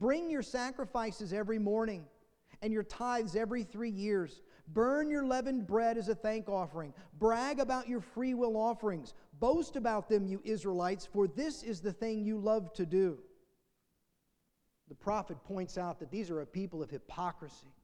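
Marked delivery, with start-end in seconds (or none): none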